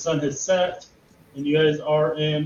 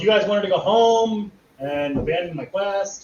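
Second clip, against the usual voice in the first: called out loudly, pitched high; 5 semitones higher than usual. Voicing Henry yelling from next to Claire: Henry yelling. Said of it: "Henry yells".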